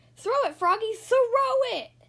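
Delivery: shrill, very high, loud screaming. Reading a story aloud, voicing the Giants shouting at Froggy: screaming. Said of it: "screamed the Giants".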